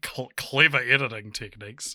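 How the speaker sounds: skeptical, incredulous, disbelieving tone. Imitating how the other speaker said a phrase: imitating an incredulous tone. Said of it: "building off your incredulousness of saying you were like".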